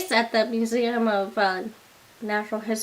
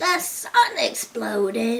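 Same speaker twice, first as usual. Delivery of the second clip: heavy, wheezy, asthmatic smoker's voice. Trying out an impression after admitting you need to work on them, in an asthmatic smoker voice. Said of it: "It sounded like a, an asthmatic smoker".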